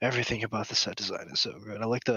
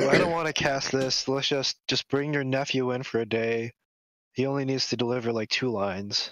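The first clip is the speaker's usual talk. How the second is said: usual speaking voice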